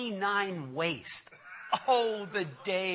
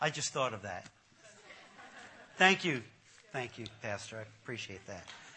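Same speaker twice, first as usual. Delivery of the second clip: ordinary delivery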